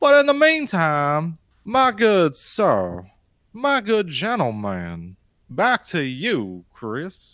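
swooping, drawn-out cartoon bird character voice. Handing the conversation back to another speaker, in a Futurama bird lawyer voice. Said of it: "You sound like the bird lawyer from Futurama".

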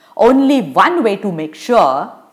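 ordinary delivery, nothing marked

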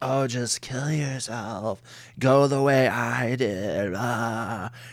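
weird, slow, sexy, seductive voice. Retelling a scene where a character lies on the floor: imitating a sexy succubus voice. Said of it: "doing this weird kinda, like, succubus, like, sexy thing".

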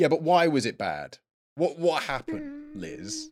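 shrill, insistent, loud, pushy, very high pitch. Acting out pressing someone who brushed off a question; retelling loud pressing questions. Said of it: "you're being loud".

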